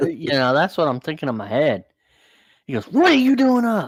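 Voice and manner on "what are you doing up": very high, shrill drill-sergeant yelling. Retelling a man yelling at a kid for being up, retelling a man yelling. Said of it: "he's just yelling at this kid".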